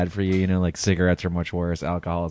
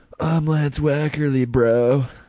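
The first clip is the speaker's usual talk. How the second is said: put-on laid-on, higher, stoned dude voice; 8 semitones higher than usual. Co-host introduces himself on the show, doing a stoned person impression. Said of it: "that was my impression of a stoned person".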